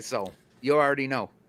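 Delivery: plain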